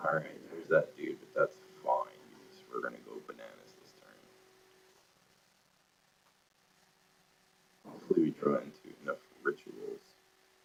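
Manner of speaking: hoarse scratchy voice. Planning the next turn in the game, scratchy voice from a raw throat. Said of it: "I sound all scratchy and miserable".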